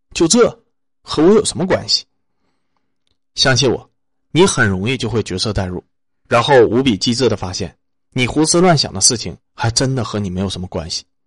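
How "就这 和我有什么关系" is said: cold, detached, aloof tone, pitched up. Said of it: "学着他们的眼神和语气问自己".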